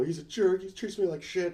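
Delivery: tearful, upset voice. Retelling someone's words over dinner while crying: imitating someone crying. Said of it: "and she's crying".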